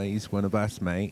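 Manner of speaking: put-on Australian accent. Showing off an Australian accent by voicing people down under, Australian accent. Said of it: "my Australian accent is so solid".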